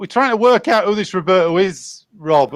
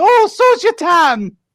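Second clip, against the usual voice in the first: put-on woman's voice, pitched higher; 11 semitones higher, 3 dB louder than usual. Doing the reply from the same film bit as Mrs. Doubtfire. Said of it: "your impression of Missus Doubtfire".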